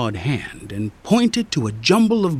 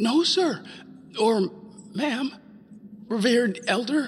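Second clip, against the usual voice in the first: high, croaking voice, words hard-won; 8 semitones higher, 6 dB quieter than usual. Alexander answers the dragon that asked if he came to steal, croaking. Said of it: "croaked out".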